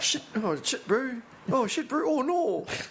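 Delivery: very high squeal, mock Kiwi-Canadian accent. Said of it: "Imagine, uh, New Zealand playing Canadian".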